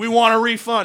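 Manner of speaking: very loud, high-pitched crowd-style yell. Retelling what people in the audience shouted: imitating people shouting. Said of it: "People were shouting".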